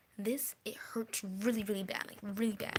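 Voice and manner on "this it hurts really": ordinary delivery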